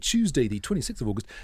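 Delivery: on-air radio presenter voice.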